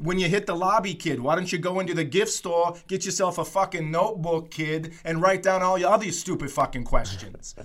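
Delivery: put-on Boston accent. Imagining how he might keep mocking the speaker's question, in a mocking Boston accent. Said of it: "doing the Boston accent after that".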